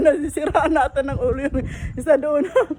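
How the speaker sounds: words laughed out while speaking.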